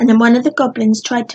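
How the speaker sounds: plain reading voice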